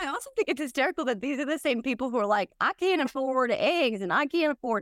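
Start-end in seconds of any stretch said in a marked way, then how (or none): 2.6-4.8 slow, drawn-out put-on Southern accent. Speaker mocking people who complain about prices, quoting them: Southern accent. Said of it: "I'm doing a Southern accent".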